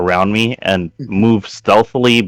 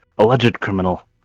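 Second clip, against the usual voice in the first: quiet mutter under the breath; 4 dB quieter than usual. Speaking as a player character about the criminal: muttering under breath. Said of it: "I mutter under my breath".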